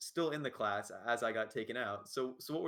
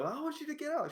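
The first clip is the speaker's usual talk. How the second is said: very high pitch, almost yelling. Retelling how a teacher ordered a student out: imitating someone almost yelling. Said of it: "she's kinda almost yelling".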